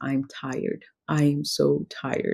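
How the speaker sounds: put-on crying, words broken by sobs. Retelling a breakdown in the car to her husband: retelling own words through sobs. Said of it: "all I can say in between my sobs is".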